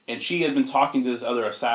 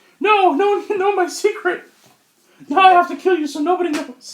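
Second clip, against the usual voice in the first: high-pitched, loud squeaking voice; 8 dB louder than usual. Describing a masked villain's real voice under the mask: Mickey Mouse voice. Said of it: "He actually talks like Mickey".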